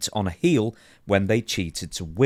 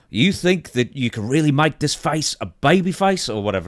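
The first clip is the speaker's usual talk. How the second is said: bad put-on New Zealand accent, raised pitch; 6 semitones higher, 5 dB louder than usual. Retelling someone slamming a desk and leaning into another man's face, in a terrible accent. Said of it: "A terrible accent".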